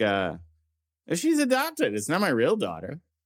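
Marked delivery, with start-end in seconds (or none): 1.1-3.0 high, fretful, whiny put-on voice. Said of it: "I'm gonna just sound like".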